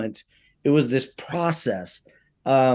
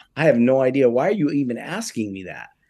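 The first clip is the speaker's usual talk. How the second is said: usual speaking voice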